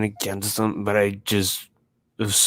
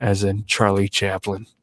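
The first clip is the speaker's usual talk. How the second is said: usual speaking voice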